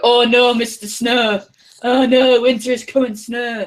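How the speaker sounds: put-on absurdly hammed-up, ridiculously over-the-top Yorkshire accent. Mocking how everyone in the show talks, in an over-the-top Game of Thrones Yorkshire accent. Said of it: "really ridiculously over the top Yorkshire accents".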